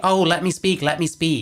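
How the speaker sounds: scornful, derisive, mocking tone. Mocking the other debater's request to talk: mocking imitation of the other debater. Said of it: "he's like".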